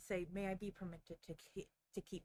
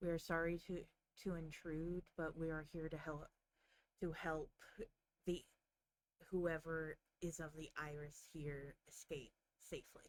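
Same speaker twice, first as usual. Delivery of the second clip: speaking in a low voice. Game narrator voicing a bowing butler-like figure addressing the group, low tone. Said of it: "speaks in a low tone".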